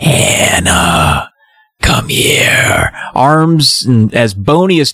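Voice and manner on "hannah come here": ghostly, unearthly, inhuman, eerie whisper. Retelling a book scene, a shadowy figure calls the girl: inhuman whisper. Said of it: "beckons her with this inhuman whisper".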